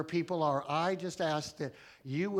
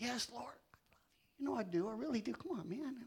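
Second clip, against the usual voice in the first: pressing, mock-hurt, pained voice, pitched up; 7 semitones higher, 9 dB quieter than usual. Retelling Peter answering Jesus a third time: acting out Peter in pain. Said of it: "it's just painful for Peter".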